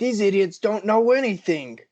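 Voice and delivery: put-on exasperated outburst. Imagining older listeners' reaction to the hosts' memory gap: imitating listeners yelling. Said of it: "yelling at us".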